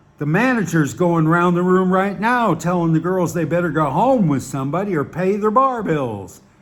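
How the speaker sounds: ordinary delivery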